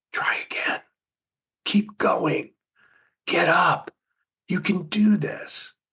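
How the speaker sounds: barely voiced, hushed, quiet, soft whisper. A speaker voices the encouraging inner voice of the winner, in a whisper. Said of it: "The winner whispers. It's much quieter".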